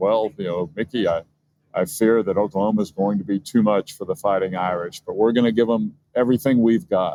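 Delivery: normal talking voice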